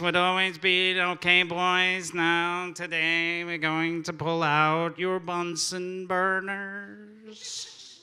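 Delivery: slow, very nasal teacher voice, "burners" drawn out. Recalling the science teacher's class, imitating Mister Guthrie's nasal voice. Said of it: "in a very nasally voice".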